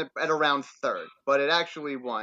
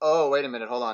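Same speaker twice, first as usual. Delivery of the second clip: plain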